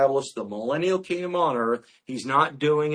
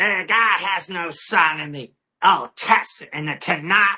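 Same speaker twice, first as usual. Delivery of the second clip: put-on drunken, gravelly voice; 4 semitones higher, 4 dB louder than usual. Retelling a woman's claim before correcting her, imitating her drunken, gravelly voice. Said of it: "in her drunken, grovelly voice".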